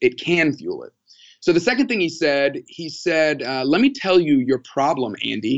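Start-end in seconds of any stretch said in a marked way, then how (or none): 3.6-5.6 sassy, stern tone with attitude. Retelling what an advisor told Andy, imitating someone with attitude. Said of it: "I say that with a little more attitude".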